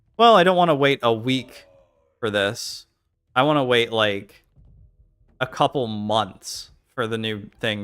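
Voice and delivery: ordinary delivery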